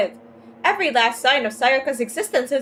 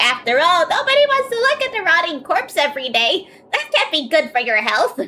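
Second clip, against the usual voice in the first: strained, throat-hurting voice; 3 semitones higher than usual. Reading a game character's lines aloud: throat-straining put-on voice. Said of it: "I hate this voice".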